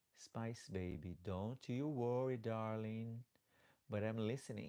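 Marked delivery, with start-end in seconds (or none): none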